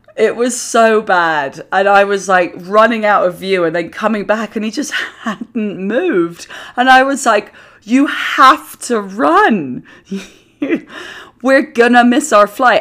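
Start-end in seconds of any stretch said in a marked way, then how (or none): 7.8-12.8 laughing, high, lingering on stretched "run". Retelling urging him on to catch their flight: laughing while speaking. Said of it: "I'm saying it in a laughing way".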